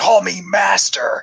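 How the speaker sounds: acted, mild half-shouted yell. Retelling a scene where a captor yells at chained women: imitating someone yelling. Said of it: "yelling at them".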